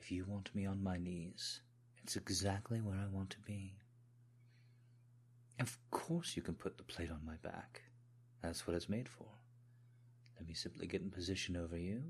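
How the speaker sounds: put-on British accent. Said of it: "people have asked me to try and put on a British accent".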